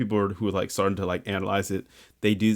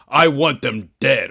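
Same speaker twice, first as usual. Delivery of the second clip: loud, slow, hammy, try-hard cheesy villain voice; 4 semitones higher, 6 dB louder than usual. Mocking the announcer at the start of a Zelda trailer: cheesy dark villain voice. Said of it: "He's trying to be very dark, and it's making him sound very cheesy".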